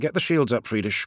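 ordinary delivery

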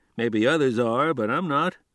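ordinary delivery

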